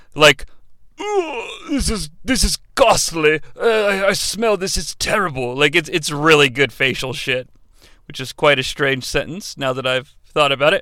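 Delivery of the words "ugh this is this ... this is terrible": appalled, groaning complaining tone. Acting out a wrestler coming down the aisle disgusted: William Regal impression. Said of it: "doing his best William Regal impression".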